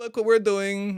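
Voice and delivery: very high, bad fake Russian accent. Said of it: "That was a bad Russian accent".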